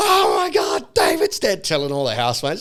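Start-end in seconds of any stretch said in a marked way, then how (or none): 0.0-1.6 mock panicked, drawn-out, freaked-out alarm cry. Retell a woman telling all her housemates that david is dead, imitating someone freaking out. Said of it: "she starts freaking out".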